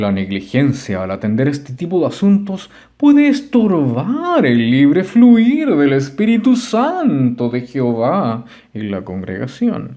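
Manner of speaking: very loud, preachy, pedantic elder voice. Reading a chapter aloud, in a pedantic elder voice. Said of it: "Voy a leer con voz de, de anciano pedante".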